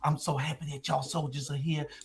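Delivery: very hushed, barely audible half-whisper. Retelling what Estella said to the soldiers, imitating Estella's half-whisper. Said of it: "Why are you whispering?".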